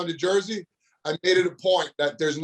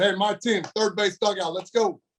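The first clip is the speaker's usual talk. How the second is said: ordinary talk, nothing marked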